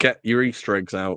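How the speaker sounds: ordinary delivery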